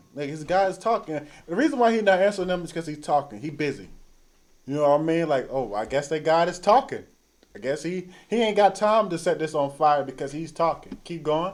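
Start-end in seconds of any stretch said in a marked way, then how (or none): none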